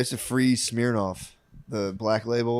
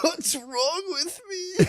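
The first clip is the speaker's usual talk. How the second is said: tearful sobbing, crying, very high-pitched. Retelling coming home to his dorm after being rejected, mock crying. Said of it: "come home to my dorm and cry".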